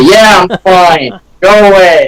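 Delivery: odd put-on American accent, high and slow. Answering people hammering on the door, impersonating Mister McMillan. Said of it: "my best impersonation of him".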